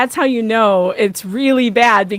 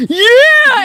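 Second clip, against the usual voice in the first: put-on excited child screaming, higher and louder; 14 semitones higher, 7 dB louder than usual. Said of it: "And he starts screaming".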